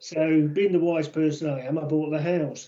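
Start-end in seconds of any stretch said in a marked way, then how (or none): none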